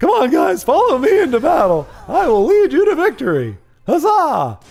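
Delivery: put-on very high, loud, cracking kid voice. Retelling a kid who got to lead the class march, imitating his cracking voice. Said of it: "his voice was cracking".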